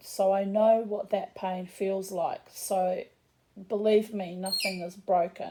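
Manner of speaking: usual speaking voice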